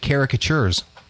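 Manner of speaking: high-pitched caricatures with CAR stressed.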